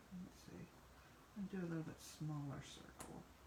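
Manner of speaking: whispered, quiet muttering under the breath to oneself. Drawing circles while explaining, in the zone, mumbling. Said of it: "Sorry, I'm mumbling".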